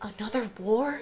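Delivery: earnest, genuinely worried, concerned tone. Retelling a coworker's sudden question: imitating someone sounding concerned. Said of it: "the most concern I've heard in his voice".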